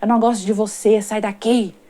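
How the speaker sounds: put-on diabolical, demonic, devilish voice. Retelling what a strange woman at a second job said: imitating a diabolical voice. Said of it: "ela falava com aquela voz diabólica".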